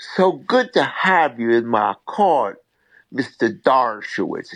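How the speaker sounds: slow, unhurried, deep Southern drawl. Retell how Judge Dupree looked down and addressed Mr. Dershowitz in court, in his deep Southern accent. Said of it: "in a deep Southern accent".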